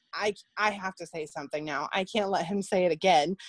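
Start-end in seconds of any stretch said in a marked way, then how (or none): none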